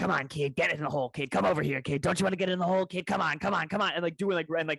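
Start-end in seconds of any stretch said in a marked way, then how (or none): 0.0-3.4 unsettling, creepy-stranger put-on voice. Quoting someone whose avatar turned to look at him, creepy voice. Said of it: "doing this like creepy voice".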